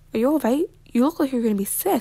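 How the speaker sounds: ordinary delivery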